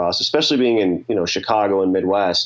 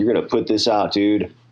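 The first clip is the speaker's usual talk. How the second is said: put-on cocky tone. Retelling what was said while handing it over: imitating own cocky tone. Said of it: "trying to be cocky".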